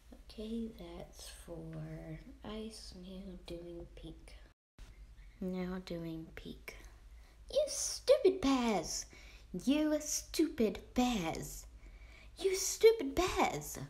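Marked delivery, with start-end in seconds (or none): 7.5-13.8 put-on rough, loose British accent, very high, loud. Voicing a character yelling at the bears: kind of a british accent. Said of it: "I know that was kind of a British accent".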